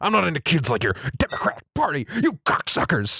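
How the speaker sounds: put-on blowhard voice, pitch swinging all over. Reading out a quote to the other speaker: Alex Jones voice. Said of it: "let me get my Alex Jones voice on".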